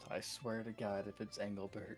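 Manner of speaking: quiet muttering under breath. Reacting in character to a mention of a hunter: muttering under breath. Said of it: "I mutter under my breath".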